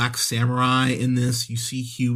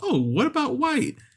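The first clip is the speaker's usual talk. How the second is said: very high put-on woman's voice. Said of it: "two of the women he's with go".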